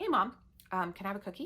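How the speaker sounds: ordinary talk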